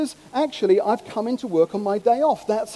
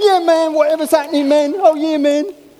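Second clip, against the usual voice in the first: put-on American speech with a Jamaican accent; 5 semitones higher, 8 dB louder than usual. Mocking a would-be gangster from Barnes, American with a Jamaican accent. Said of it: "American with a Jamaican accent".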